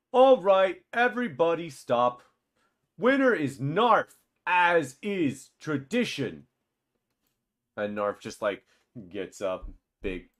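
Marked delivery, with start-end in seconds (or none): 0.1-6.4 very loud, deliberate, booming announcer call, pitched up. As the players head back, [name] calls everyone to stop and announces the winner, [name]'s loud voice. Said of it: "you hear [name]'s uh, loud voice".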